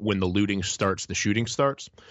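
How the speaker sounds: normal talking voice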